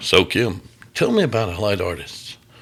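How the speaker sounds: put-on radio announcer voice. Recalling how he first started doing interviews, radio voice. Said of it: "I would get on with the radio voice".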